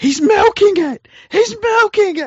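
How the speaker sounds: very high, drawn-out yelling. Imagining watching rugby league with a newcomer: imitating someone yelling. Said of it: "all of a sudden you start yelling".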